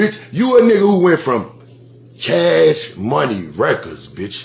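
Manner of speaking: very slow, deliberate delivery with every word laid out. Insulting a rival, repeating the line so everyone hears it: said deliberately slow. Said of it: "let me say this slow".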